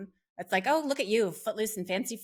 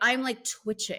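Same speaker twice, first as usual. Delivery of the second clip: plain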